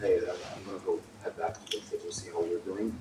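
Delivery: soft, secretive, hushed half-whisper. Voicing Diana as she speaks to a player: half-whispering as Diana. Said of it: "Diana whispers to you".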